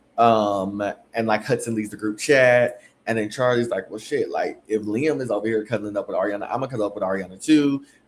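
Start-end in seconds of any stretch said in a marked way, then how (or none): none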